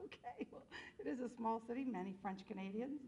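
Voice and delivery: normal talking voice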